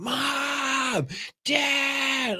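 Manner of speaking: mock very high child's scream, "mom" stretched. Retelling how a nephew woke everyone at five in the morning, imitating a child screaming. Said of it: "you just hear my nephew just screaming".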